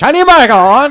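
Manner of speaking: quick, very high-pitched blurted exclamation. Showing how the phrase must be said: faster and higher-pitched. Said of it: "faster and with a higher pitch".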